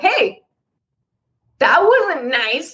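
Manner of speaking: playful teasing tone, acted. The speaker retells calling her out when she says something to Matt, retelling a playful callout. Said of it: "I'll say it sort of like in a playful sort of tone".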